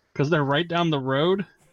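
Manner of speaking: ordinary talk, nothing marked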